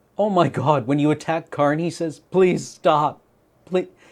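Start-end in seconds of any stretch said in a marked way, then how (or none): 2.2-3.9 acted-out pleading, begging voice. Retelling what a game card says when attacked: imitating Karn begging. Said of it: "He begs for his life?".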